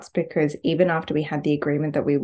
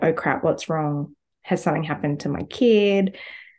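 usual speaking voice

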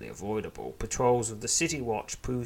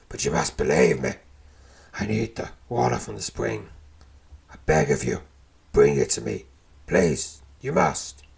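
put-on loud, rough, croaky old man voice; 7 dB louder than usual. Narrator voices an old man in a hidden lair beneath the Well of Blades: croaking old man voice. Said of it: "croaking out nearly every other word".

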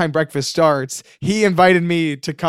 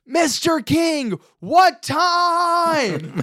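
mock very high, very slow, drawn-out shout; 11 semitones higher than usual. Retelling yelling a question through a car windshield: retelling a yell through a windshield. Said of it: "I'm yelling through his windshield".

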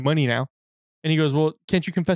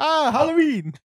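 very high-pitched exclamation; 11 semitones higher than usual. Retelling a movie character's replies to a race car compliment: imitating Juan Carlos. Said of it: "He was like".

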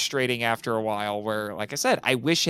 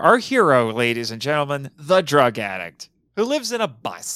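slightly sarcastic, teasing, mocking tone; 5 dB louder than usual. Introducing the show's main character to the audience: sarcastic. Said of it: "I was being a little sarcastic".

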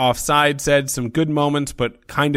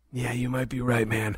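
put-on cool-guy voice, much quieter; 9 dB quieter than usual. A co-host agrees with the other host during the show's intro, in a put-on cool voice. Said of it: "I just have a cool voice all of a sudden".

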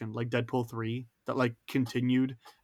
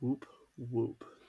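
deadpan, flat, soft cheer with zero excitement; 6 dB quieter than usual. Responding to a podcast self-promo plug with a flat, unenthusiastic whoop. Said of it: "Most unenthusiastic whoop whoop ever".

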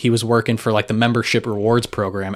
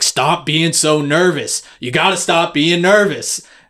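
loud, high-pitched yell; 7 semitones higher, 5 dB louder than usual. Retelling a pit manager yelling at the speaker, imitating a man yelling. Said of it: "he keeps yelling at me".

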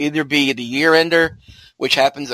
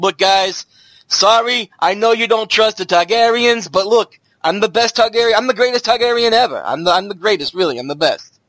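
put-on New Jersey accent, faster; 6 semitones higher than usual. Speaking as a Targaryen to a group of guys, in a Jersey Shore accent. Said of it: "he sounds like he's from Jersey Shore".

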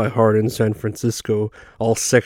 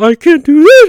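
very high, very loud, squeaky pained cry; 11 dB louder than usual. Retelling a movie scene, a man questioned by cops: imitating high-pitched voice changes. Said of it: "reacting with high-pitched changes in his voice".

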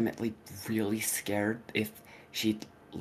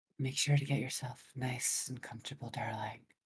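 soothing ASMR delivery; 2 semitones higher, 4 dB quieter than usual. Doing a little asmr for listeners to sleep to: asmr voice. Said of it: "Is it fair if I do a little bit of A S M R?".

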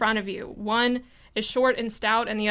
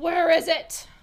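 high-pitched, demanding yell; 7 semitones higher than usual. One of the intruders gets up in the player character's face, shouting. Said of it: "and he shouts".

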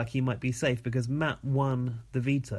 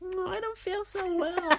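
put-on pig voice, much higher pitch. Urged by the others to do the voice: pig character voice. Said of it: "Finally an impression".

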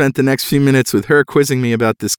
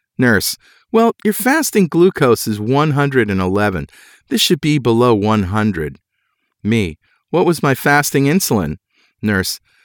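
plain

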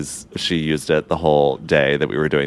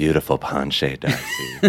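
eeriest, creepiest, spooky voice, totally serious. Retelling what she said during ballet, in a spooky, creepy voice. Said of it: "in the like spookiest, creepiest voice".

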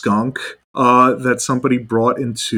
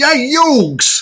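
very high Brooklyn drawl, Yugs stretched out. Quoting how a cartoon character says a nickname: Joey Wheeler Brooklyn accent. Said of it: "Joey Wheeler saying that with his, like, Brooklyn accent".

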